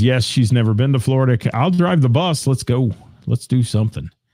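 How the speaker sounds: plain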